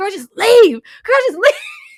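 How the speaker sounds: very high, very loud, shrill exasperated yell. Recalling watching scenes where she stays, retelling a yell. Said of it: "I was yelling".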